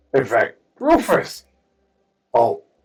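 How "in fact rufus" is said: loud, high-pitched yelling. Voicing a character calling out to a friend at the gate: yelling a name. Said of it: "I yelled".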